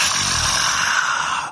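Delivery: evil, low, creaky, demonic groaned ah.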